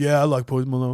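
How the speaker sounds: masculine voice. In a sketch, answering a guy's question, in a masculine voice. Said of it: "you kind of got a masculine voice".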